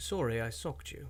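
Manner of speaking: put-on English-accented delivery. Josh reads a headline aloud at the host's request, in a british accent. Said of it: "if you would say that with a British accent".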